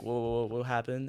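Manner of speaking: quiet, low stuttering. Retelling being pulled over by the officer, imitating own stuttering.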